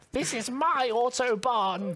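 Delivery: put-on, high-pitched posh English accent. Imagining the Queen speeding past on the road, the speaker does a Queen Elizabeth II impression. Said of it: "That was a great impression".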